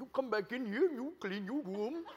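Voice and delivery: strict-sounding, put-on Indian accent. Telling a story, the speaker quotes a strict dad ordering his son: Indian accent. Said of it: "his dad spoke kind of the Indian dialect".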